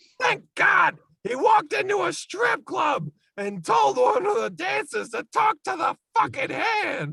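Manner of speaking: complaining voice, pitched very high. Doing a bad impression complaining about a Terminator movie scene: Gilbert Gottfried impression. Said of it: "even Gilbert Gottfried just complaining about things".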